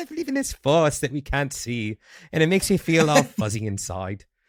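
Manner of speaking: put-on storybook British accent, lilting and swooping. Speaker acts out their own inner voice: British accent. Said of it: "It's always a British voice inside my head".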